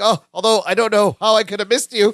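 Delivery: awkward, flustered tone. Recapping an episode where he apologises to pregnant Jennifer, mock-nervous remark. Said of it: "laughs nervously".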